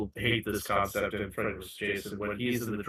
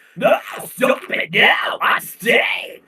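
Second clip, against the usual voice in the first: hammy, very slow, loud, drawn-out overacting; 12 semitones higher, 6 dB louder than usual. Retelling how the actress delivered a line: imitating Laurie's overacting. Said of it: "she's like an overactor".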